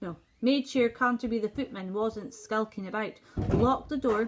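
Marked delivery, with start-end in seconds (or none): none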